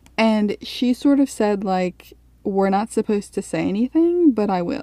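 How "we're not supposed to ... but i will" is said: ordinary talk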